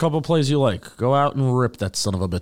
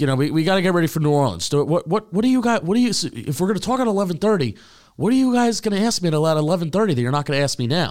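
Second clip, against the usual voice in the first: pitched-up, sarcastic, stumbling, repeated needling tone; 5 semitones higher than usual. Retelling what he said to reporters after the presser: imitating a sarcastic tone. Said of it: "being sarcastic".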